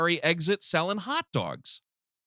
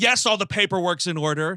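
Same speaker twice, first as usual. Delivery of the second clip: imitated contemptuous, scornful tone; 2 semitones higher than usual. Retelling a character's reply about the car paperwork: imitating a contemptuous tone. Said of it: "the tone in her voice is".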